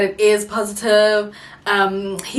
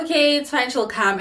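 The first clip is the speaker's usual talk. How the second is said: ordinary talk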